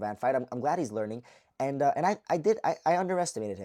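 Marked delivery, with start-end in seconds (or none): none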